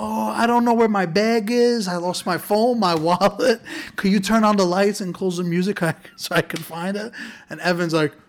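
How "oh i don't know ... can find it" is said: high, frantic, hysterical sobbing while talking. Retelling a girl who came to the front door, imitating hysterical crying. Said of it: "she's like hysterical crying like".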